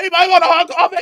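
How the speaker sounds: mock yelling. Retelling a video of a prank at a gas station: imitating someone yelling. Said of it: "he just kept yelling that".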